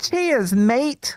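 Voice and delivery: put-on Australian accent. Friend trying out a two-word impersonation for the others, unintended australian accent. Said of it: "why do I sound Australian?".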